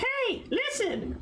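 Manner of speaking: very high, fairy-like video-game companion voice. Retelling a game story, a little orb calls out like Navi. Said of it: "like a fucking Navi".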